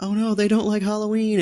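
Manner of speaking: very high squealed, lamenting scream. Recounting trick-or-treating, acting out what the group yelled at unlit houses: imitating a high-pitched scream. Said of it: "scream in a high pitched voice".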